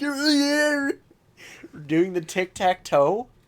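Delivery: very high, shrill, loud cartoon voice. Quoting a cartoon scene to explain a missed reference: SpongeBob voice. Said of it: "He's like".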